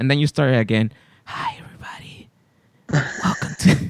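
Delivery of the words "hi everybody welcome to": breathy, whispered, seductive sexy voice. Retelling how Andy restarted the intro: imitating Andy's sexy voice. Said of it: "you're doing your sexy voice".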